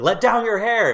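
play-acted high, frantic, panicked yell. Retelling a movie scene, acting out the line: imitating a panicked yell. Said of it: "panicked, like, he's yelling her name".

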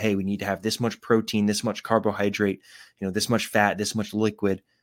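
usual speaking voice

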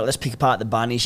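ordinary talk, nothing marked

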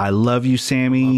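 put-on screaming cheer, called out. Retell how a girl screamed at Sammy Guevara through the entire match, imitating a screaming fan. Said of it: "She screamed the entire match".

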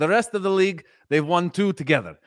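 put-on Russian-sounding accent, boastful. Imitating a coach boasting about his championships: imitating Mourinho in Russian-sounding accent. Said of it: "was that a Russian accent".

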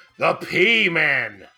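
acted sports announcer voice. Listing nicknames for a football team in a Chris Berman impression. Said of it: "I'm gonna do my Chris Berman, uh, impression here".

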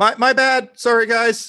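shouting. A game master voices a character apologizing to the group, yelling an apology. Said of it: "Bucky just yells".

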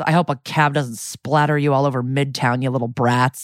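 mock muttering under breath. Retelling what a lady walking with kids said, imitating someone muttering. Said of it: "under her breath goes".

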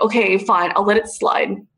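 ordinary talk, nothing marked

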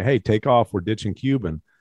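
ordinary delivery

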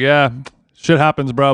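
normal talking voice

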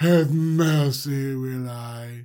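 creepy, sinister, slow, low, menacing whisper.

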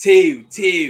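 put-on high, loud yell in a Baltimore accent. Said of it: "That's how they say it".

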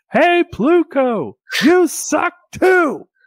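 put-on very high, shrill, loud heckling yell. Retelling a ballgame, imitating a heckler shouting at the pitcher taking the mound. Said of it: "a guy who is just shouting".

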